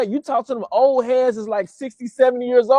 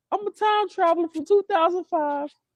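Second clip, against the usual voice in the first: little, light, soft voice, pitched up; 6 semitones higher, 6 dB quieter than usual. Telling a story about a YouTuber, the speaker imitates Jake's little light voice. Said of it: "He got that little light voice".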